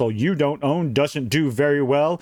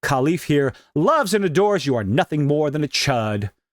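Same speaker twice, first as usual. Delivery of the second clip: normal talking voice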